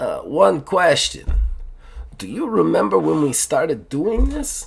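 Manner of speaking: put-on Russian accent. Speaker voices the tea shop owner asking a question as someone walks out, Russian accent. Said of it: "He speaks with a Russian accent".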